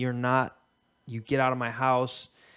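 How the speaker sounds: put-on dead-serious threatening voice. Telling friends how a woman threatened a guy, quoting her dead serious. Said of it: "sounded dead serious".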